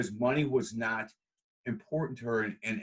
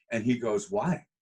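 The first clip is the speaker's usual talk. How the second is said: ordinary talk, nothing marked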